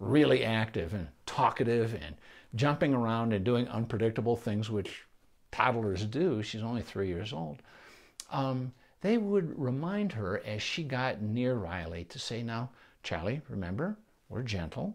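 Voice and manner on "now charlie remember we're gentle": put-on, very gentle tone. Speaker retells parents reminding their toddler near the dog Riley: mimicking a very gentle tone. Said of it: "they said it in a very gentle tone".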